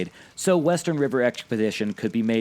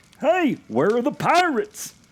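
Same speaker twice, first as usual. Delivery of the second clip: very high, put-on tourist voice; 13 semitones higher than usual. Imitating a disappointed 1970s tourist asking about the ride: imitating a 1970s tourist. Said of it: "the best tourist impression I could give".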